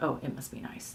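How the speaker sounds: half-whispered, breathy, condescending, resentful tone. Recalling own old attitude toward other people: mock-condescending resentful tone. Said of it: "in a really kind of condescending way, like resentful for sure".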